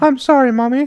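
put-on loud, high voice like a small boy. Acting out a Psycho bit with two voices, answering the mother as Norman in a little boy voice. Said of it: "He's a little boy in that situation".

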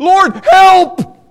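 very loud, piercing, high-pitched scream. Recounting the moment they called out for help, retelling a scream. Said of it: "I just screamed out".

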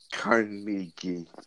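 soft, slow mumble under the breath.

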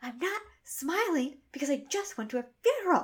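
put-on, high-pitched screaming. Recounting a TV scene where a woman is catcalled, the speaker retells her reply: retelling a scream. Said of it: "she just screams".

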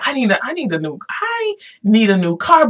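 normal talking voice

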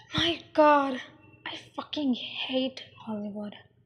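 mumbling. A woman replies to the man she is talking with, mumbled. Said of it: "she mumbled".

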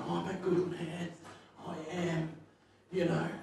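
put-on very hushed, very quiet, tearful crying voice. Retelling what a crying man told them, imitating a man crying. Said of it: "And he's crying".

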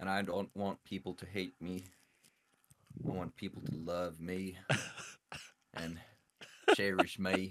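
Southern US accent gradually creeping in. Answering the host's question on the show, slipping into a southern accent. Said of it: "he's getting a southern accent?".

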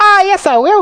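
tiny squeaky voice, very high and small. Mike Teavee answers back after Mrs. Teavee's cry, in a tiny squeaking Mike Teavee voice. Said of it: "squeaked the tiny voice of Mike TV".

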